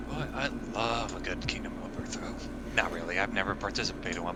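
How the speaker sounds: soft, sarcastic whispered aside.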